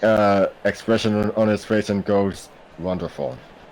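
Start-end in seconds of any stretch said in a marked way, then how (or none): 2.8-3.4 deadpan, softer, flat with no excitement. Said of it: "just has a deadpan, uh, expression".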